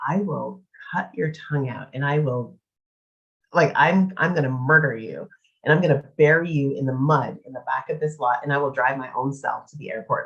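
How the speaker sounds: ordinary talk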